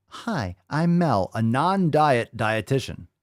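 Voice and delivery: very slow, mocking parody voice. Cutting off a video clip, then mimicking the dietitian's introduction: mocking imitation of Mel. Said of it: "I'll stop you right there, Mel".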